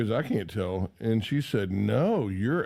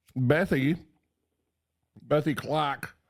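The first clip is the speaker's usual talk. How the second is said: mock, fake put-on Australian accent; 3 semitones higher than usual. Giving the name bethy clark during the show intro, fake australian accent. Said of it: "I can't do that the whole time".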